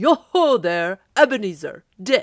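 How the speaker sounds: booming, very loud, rich, oily, comfortable jovial call. Narrator reading an old gentleman calling out to ebenezer and dick, in a comfortable, oily, rich, jovial voice. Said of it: "At sight of an old gentleman in a Welsh wig, / At sight of an old gentleman in a Welsh wig, sitting behind such a high desk that if he had been 2 inches taller, he must have knocked his head against t".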